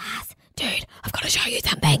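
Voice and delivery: hushed, soft, breathy whisper. Retelling how a housemate came home and showed something: imitating a whisper. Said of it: "started whispering to me and she was like".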